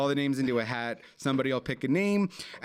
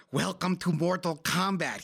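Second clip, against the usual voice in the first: higher-pitched evil cartoon henchman voice; 4 semitones higher than usual. Talking about a movie you love, do a line from it in a poor Christopher Lambert impression. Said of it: "sounded like you were an evil henchman in a cartoon".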